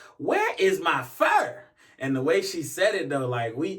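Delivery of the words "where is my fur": mock wild, unhinged holler, high and drawn-out. Retelling a store customer shouting at staff about her missing fur: retelling a crazy holler. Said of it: "hollered out in like the craziest voice".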